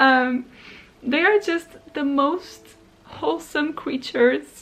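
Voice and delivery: high, choked-up voice on the edge of crying. Talking about how much the speaker loves the Hobbits, about to cry. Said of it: "I'm about to cry".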